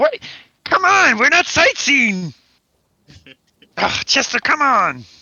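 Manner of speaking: put-on very high kids'-show puppet voice. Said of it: "Brooke is starting to sound like a".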